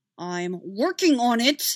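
words squeezed out through a clenched jaw. Narrator reads Ani answering Kenobi while dodging laser blasts, through gritted teeth. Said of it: "Ani said through his teeth".

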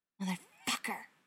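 hissing. John reacting after Gerard says he saw them from across the street; hissed. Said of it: "John hissed".

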